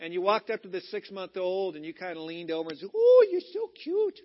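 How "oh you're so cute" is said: put-on baby talk, much higher and louder. Leaning over a six-month-old in the church nursery, doing baby talk to an infant. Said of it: "you're doing your little baby talk".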